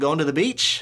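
question-like rising pitch at end of "beach". Imitating how someone's statements sound like questions: rise at end of beach. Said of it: "a lot of times it sounds like a question".

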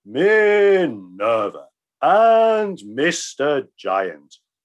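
grand, very slow delivery. Narrator reads a bowing character addressing Minerva and Mr. Giant, grandest voice he could manage. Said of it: "said in the grandest voice he could manage".

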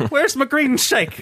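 put-on Irish accent. Joking about Saint Patrick's Day on an all Irish episode: put-on Irish accent. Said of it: "yours is great".

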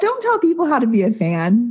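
slightly sassy tone. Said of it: "I am being a little sassy".

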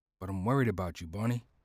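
hushed whisper. John answers Bonita through a window with a guard nearby, whispering. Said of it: "John mirrored her movement and whispered".

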